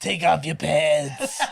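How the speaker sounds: lingering, very slow, every word stretched out. Acting out Harvey Fierstein playing Harvey Weinstein: Harvey Fierstein voice. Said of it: "your Harvey Firestein voice".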